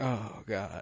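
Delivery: very soft, barely audible, weary-sounding sigh. Retelling how Alicent reacts at the table: imitating Alicent sighing. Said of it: "sighs and is like".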